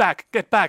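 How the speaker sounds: stammering words, very loud and high pitched. Narrating what a character says, in a stuttering voice. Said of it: "In a stuttering voice".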